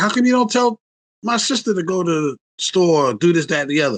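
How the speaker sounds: play-acted, mad, protesting angry outburst. Retelling complaining to mom about the sister: imitating own angry complaint. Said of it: "And so I was mad".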